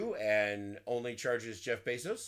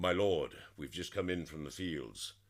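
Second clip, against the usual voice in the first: low, fake posh fantasy-style accent; 6 semitones lower than usual. Demonstrating how fantasy games make characters sound posh: put-on posh fantasy-game accent. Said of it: "if they want to sound posh in like a".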